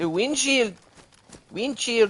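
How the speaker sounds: put-on high Spanish-accented English, Mexican style. Saying the old word of the day like a Mexican guy: Mexican Spanish accent. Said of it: "You have to say it like a Mexican guy".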